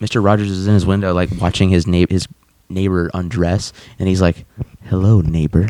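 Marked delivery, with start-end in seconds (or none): 4.8-5.7 creepy, put-on friendly, neighborly voice. Retelling a cartoon scene of a neighbor at a window: creepy Mister Rogers voice. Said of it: "It's so creepy".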